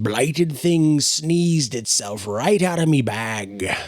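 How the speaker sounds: gurgling frog-creature voice. Narrating a story, voicing one of the characters in a gurgling voice. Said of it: "gurgling voices".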